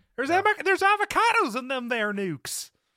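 put-on high old-timey prospector voice. Riffing on an impression of Huell Hauser: Huell Hauser prospector voice. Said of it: "kind of cross with an old timey prospector".

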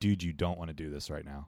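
very calm delivery. Retelling what they said to a guy one morning; retelling saying it very calmly. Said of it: "very calmly".

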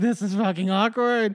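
put-on laughing through exasperation. Retelling how someone reacted on a boat: imitating an exasperated laugh. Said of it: "exasperated laugh of just".

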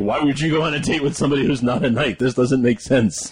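usual speaking voice

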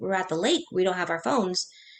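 ordinary delivery

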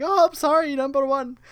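put-on very high, slow, cracking young voice. Imagining a fresh-faced ensign Scotty instead of the one chosen: young Scotty with a voice crack. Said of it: "like a voice crack or something like that".

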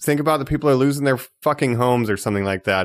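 ordinary talk, nothing marked

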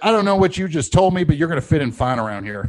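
loud, high-pitched put-on Texas accent. Retelling what a future boss said after a startup pitch: texas accent. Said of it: "And his Texas accent".

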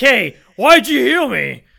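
very loud, high, dopey, dim-witted put-on voice. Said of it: "he's like".

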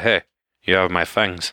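ordinary delivery

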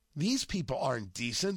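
ordinary delivery

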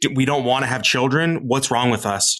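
ordinary talk

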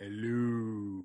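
"hello" drawn out long and lingering. Greeting the hosts as Tom Baker: Tom Baker impression. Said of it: "that's the limit of my Tom impersonation".

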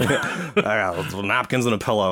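ordinary talk

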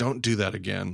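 put-on angry scolding voice. Retelling how a line from a scene could have sounded: imitating an angry dad scolding. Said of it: "it could have come off like an, an angry dad".

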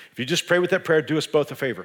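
ordinary delivery

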